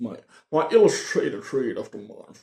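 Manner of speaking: put-on Irish-tinged accent. A reader names his illustrated read of the month in an Irish Sean Connery voice. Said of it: "an Irish Sean Connery".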